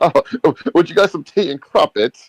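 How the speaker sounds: very high, upper-crust posh English accent. Showing how Europeans usually talk: posh English accent. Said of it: "They typically talk more posh".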